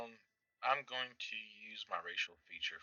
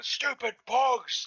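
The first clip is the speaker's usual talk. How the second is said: shrill, furious, very loud, high yell; 11 dB louder than usual. Voicing a raging character slapping bugs off his chest: yelling in character. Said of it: "Just yelling".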